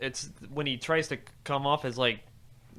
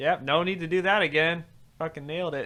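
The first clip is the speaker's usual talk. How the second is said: high, loud, sarcastic mock approving voice. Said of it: "And they were like".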